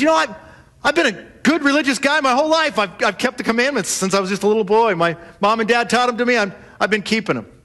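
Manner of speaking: self-satisfied, puffed-up, very proud boastful voice. Retelling a Gospel story, voicing a man's answer in a mock-proud voice. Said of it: "in a very proud voice".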